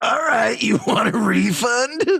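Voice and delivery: very high, slow, dragged-out celebrity-chef host voice. Offering a complaining diner a refund: Guy Fieri voice. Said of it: "I'll be Guy Fieri".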